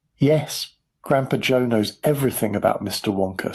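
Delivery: ordinary delivery, nothing marked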